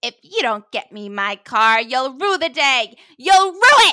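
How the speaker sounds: loud yell, climbing in pitch. Retelling a scene where a character threatens Carly: imitating a yell. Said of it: "points his finger at Carly and yells".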